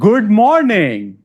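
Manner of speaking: ordinary, normal speaking voice. Demonstrating two ways of saying a greeting, this one really loud. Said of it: "One was really loud".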